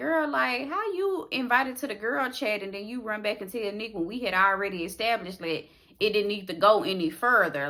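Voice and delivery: ordinary talk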